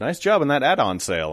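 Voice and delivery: normal talking voice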